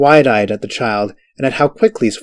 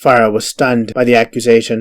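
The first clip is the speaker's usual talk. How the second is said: usual speaking voice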